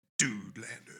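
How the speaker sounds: movie trailer announcer voiceover voice. Saying the name as asked, like the voiceover guy: announcer voiceover voice. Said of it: "say Dude Lander the right way, like if you were that guy, the voiceover guy".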